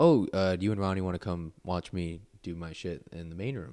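ordinary talk

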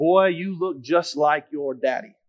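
long, slow, soft, drawn-out Oklahoma drawl. Retelling how people who knew your dad when young greeted you, in a long, slow Oklahoma drawl. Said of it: "with a long, slow Oklahoma drawl".

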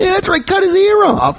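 squeaky, very high-pitched henchman voice. Mocking the other speaker's agreement as a henchman: henchman voice. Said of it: "Fucking henchman".

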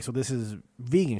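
plain

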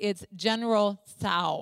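insistent, matter-of-fact tone. Retelling her eleven-year-old son correcting her in a grocery line: imitating someone saying it loudly. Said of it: "very loudly said".

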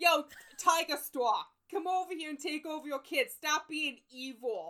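very loud, very high-pitched attempted Boston accent. Asked to read a character's lines in one, unsure speaker tries: attempted Boston accent. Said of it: "I don't know if I know how to do a Boston accent".

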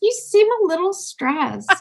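gentle, high-pitched voice. Imitating a smartwatch's alert about stress: imitating a gentle watch voice. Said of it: "It's always very gentle".

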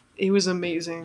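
ordinary talk

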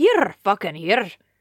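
put-on Scottish accent. Trying a phrase again for another person, in a put-on Scottish accent.

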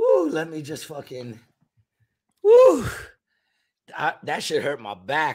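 words breaking through helpless laughter, swooping pitch. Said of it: "I'm in tears".

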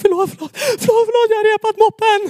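very high, gasping, words on in- and out-breaths. Retelling an apology to dad about the scratched moped: imitating talking on in- and out-breaths. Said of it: "på in- och utandning".

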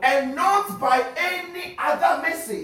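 fervent, shouted preacher-style delivery.

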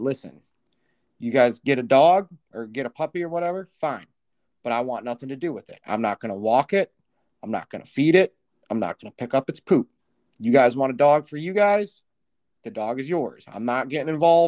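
normal talking voice

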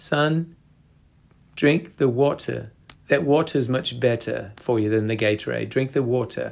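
put-on strong, heavy South African accent. Retelling hearing someone's advice during lockdown, Gary Player South African accent. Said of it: "in a very South African dialect".

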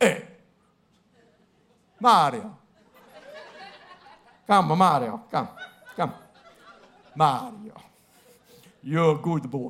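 put-on Italian mobster accent. Acting out a mafia movie boss calling a young man aside, mock italian mafia boss accent. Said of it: "my apologies to the Italian people".

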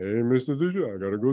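low, goofy cartoon-bear voice. Retelling a student's impressions that gave a teacher a hard time: Sylvester Stallone impression like Yogi Bear. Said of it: "He made him sound like Yogi somehow".

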